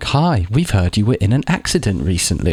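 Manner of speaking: automated, recorded machine-like voice. Retelling a spam call answered on the phone: imitating a computer voice. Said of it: "some computer voice".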